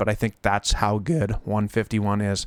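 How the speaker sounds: voice cracking and breaking mid-line. Giving viewers a price prediction, voice cracking. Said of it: "A nice voice crack there".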